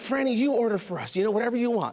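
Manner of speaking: ordinary talk, nothing marked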